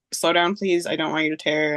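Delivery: ordinary talk, nothing marked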